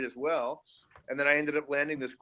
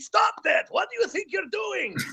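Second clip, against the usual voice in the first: upset voice, pitched very high. Asked for a sample, the speaker does the character scolding his crane Pinchy: upset character voice. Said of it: "would you mind giving us a sample of that, that voice".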